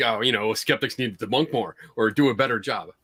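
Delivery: mock sarcastic tone. Retelling someone's remark about skeptics: imitating a sarcastic tone. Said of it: "it's like being sarcastic".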